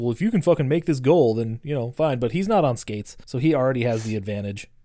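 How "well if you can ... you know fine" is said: normal talking voice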